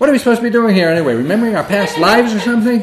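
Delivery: upset outburst, very high pitch and very loud. Speaker retells what they blurted out to him: retelling an upset blurt. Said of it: "I kind of was just so upset. I just blurted out".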